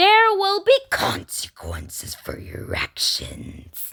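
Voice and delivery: menacing, put-on demonic voice. Speaking to viewers who might bash his opinion: demon voice. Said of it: "I had to release my demon voice".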